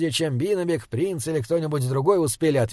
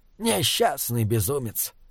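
usual speaking voice

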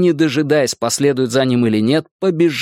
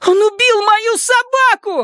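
piercing, shrill, quavering cry, very high. Narrator reads a character shouting back at a threatening gang: shrill, trembling shout. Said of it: "выкрикнул Майк пронзительным, дрожащим голосом".

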